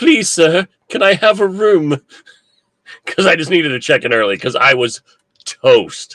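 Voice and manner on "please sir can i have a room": humble, pitched-up, pleading little orphan voice. Retelling asking at a hotel check-in desk for an early room, in an Oliver Twist voice. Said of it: "my best um, Oliver Twist voice".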